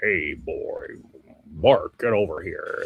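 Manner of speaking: slow, breathy cartoon voice, breathed out slowly. Describing how early Homer Simpson sounded: early Homer Simpson voice. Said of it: "Early Homer, Homer Simpson, he sounded like Walter Matthau. Like".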